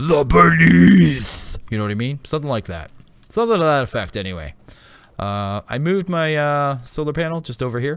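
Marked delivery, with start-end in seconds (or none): 0.0-1.6 very loud, high, full-on heavy-metal voice. Announcing the name of a new game area, said in the most metal voice. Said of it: "supposed to be said in the most metal voice you have".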